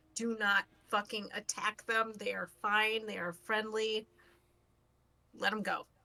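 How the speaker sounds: solemn, grave, earnest, dead serious. Telling everyone in sight not to attack the octopi: very serious. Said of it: "very seriously and say".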